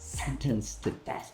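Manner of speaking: hissing between the teeth. Retaking the line quieter as the character's inner consciousness: quiet hiss through the teeth. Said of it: "kind of like a hiss ... talking between my ... teeth ... play it a little quieter".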